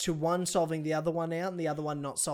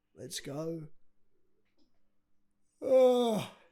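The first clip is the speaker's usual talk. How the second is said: yawning while talking. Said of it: "Sorry, I'm yawning".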